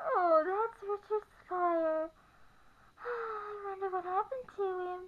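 acted, dreamy, faraway voice. Retelling how she answered when asked who that guy was: imitating her dreamy voice. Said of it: "her voice got all dreamy and said".

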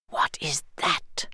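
barely voiced, very quiet whisper. The captain, halting his army on the hill, asks one of his lieutenants, whispering. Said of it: "The captain whispered to one of his lieutenants".

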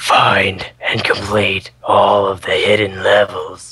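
eerie, unsettling, creepy put-on voice. Reading the line aloud after failing another voice: creepy voice. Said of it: "I'll just do it like this. Like creepy".

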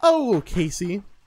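put-on, mock-sweet nicest voice. Retelling what they said to someone between parts, put-on Sunday church voice. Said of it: "my Sunday church voice".

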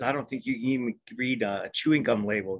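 ordinary talk, nothing marked

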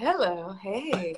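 soft, sultry hippie voice. Speaker recalls giving her tooth fairy character a voice; hippie, sexy Kim Cattrall voice. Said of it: "kind of like a hippie, sexy voice".

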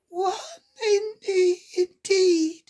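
offended, indignant, very high-pitched voice. Narrator reading a character's retort after being interrupted, indignantly. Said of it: "said the Dormouse indignantly".

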